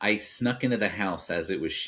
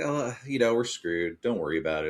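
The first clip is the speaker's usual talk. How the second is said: breezy, pitched-up nonchalance, tossed off lightly; 5 semitones higher than usual. Retelling a movie scene, quoting a character: imitating Matthew Lillard, put-on nonchalance. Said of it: "Matthew Lillard is very kinda nonchalant".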